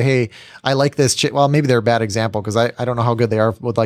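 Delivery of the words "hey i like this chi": usual speaking voice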